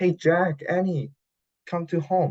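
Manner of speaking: high, loud shouted call from a distance. Retelling a story, the speaker voices jack and annie's mom calling them home, shouting from afar. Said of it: "shouting, just then a voice called them from the distance".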